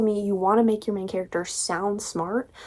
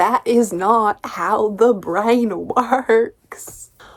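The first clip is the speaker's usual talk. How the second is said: very bad, clumsy put-on Southern accent; 4 dB louder than usual. Replying to Anna, in a very bad southern accent. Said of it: "in my very bad southern accent".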